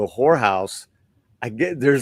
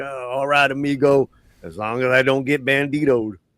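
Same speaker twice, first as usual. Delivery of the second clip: put-on cowboy voice; 3 semitones higher than usual. Quoting a favourite cowboy line from the movie: James Gammon voice. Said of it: "he's like".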